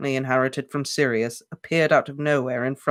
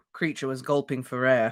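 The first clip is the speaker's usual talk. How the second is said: ordinary delivery, nothing marked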